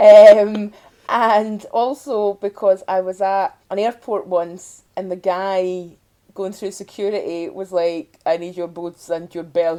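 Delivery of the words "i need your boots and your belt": put-on vaguely Romanian, Eastern European accent. Retelling what an airport security guard said, in a Romanian-sounding accent. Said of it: "He had that kind of accent".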